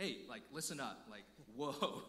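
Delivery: stern dad voice. Speaker showing how he talks to his son, in his dad voice. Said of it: "when I get my dad voice on".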